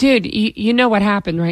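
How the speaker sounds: plain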